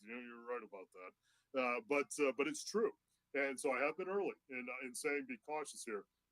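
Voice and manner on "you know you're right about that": acted grudging, gritted-teeth speech, much quieter and lower. Retelling his own reply to a man's remark, re-enacting a grudging admission. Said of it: "I grudgingly had to say through my gritted teeth".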